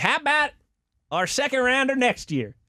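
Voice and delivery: clumsy, badly done put-on voice, high and swooping. Imagining a trade offer from Jerry, bad Jerry Jones impersonation. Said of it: "that's a bad Jerry Jones impersonation".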